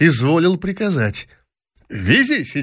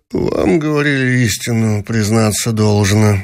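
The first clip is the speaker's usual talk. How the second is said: words squeezed through gritted teeth; 5 semitones lower than usual. A prince cuts into a woman's story to confirm it, through gritted teeth. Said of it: "проговорил сквозь зубы".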